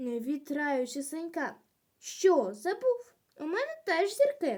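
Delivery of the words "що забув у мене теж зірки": insistent, much higher pitch. Senko argues with Hrytsyk about who goes ahead, insisting. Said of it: "наполягував Сенько".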